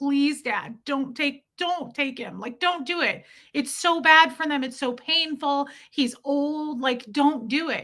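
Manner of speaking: high, pleading begging voice. Retelling begging a parent not to declaw the cat: imitating own begging. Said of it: "I was like".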